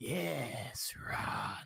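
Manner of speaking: loud, creaky, rasping, taunting otherworldly alien voice. The game master voices a demon inside Tom's mind in a taunting alien voice. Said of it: "an alien voice taunting you".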